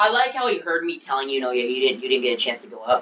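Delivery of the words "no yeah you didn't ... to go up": frank, straight, matter-of-fact tone. Retelling what was told to a classmate during class: imitating own quiet telling. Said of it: "very quietly".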